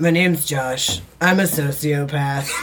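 drawled, stretched-out voice. Doing an impression of an absent friend after being asked to hear it: Josh impression. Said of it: "I could probably do a pretty good Josh impression".

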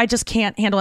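plain

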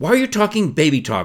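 critical scolding, high and loud.

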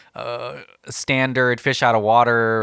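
plain

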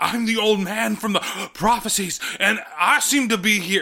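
slipping into a cartoon rooster voice. Quoting the old man from the prophecies, slipping into a Foghorn Leghorn voice. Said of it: "become fucking Foghorn Leghorn with that".

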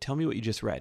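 plain

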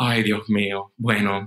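put-on reluctant voice. Retelling parents' reaction at the wedding, imitating mom's reluctant tone. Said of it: "You are doing a perfect impression of your mom".

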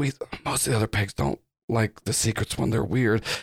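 very low, quiet whisper. Describing a scene where the Titanium Viper looks around and speaks: Titanium Viper whispering. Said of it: "whispers to you and goes".

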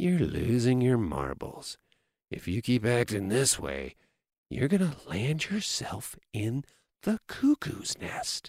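soft, calm, even near-whisper. Showing how to speak calmly to a girlfriend: calm, almost a whisper. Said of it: "calmly say to your girlfriend in almost a whisper".

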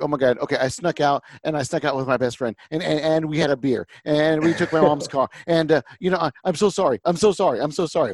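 words pouring out in one run-on, gushing stream. Retelling a coach's update as a teen confessing a sneak-out: imitating Billy Donovan talking really quick. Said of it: "That's what Billy Donovan sounded like. It's just, like, really quick".

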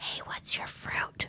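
soft, barely voiced whisper. Retelling what the person seated beside the speaker whispered, retelling a whisper. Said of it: "whispered to me".

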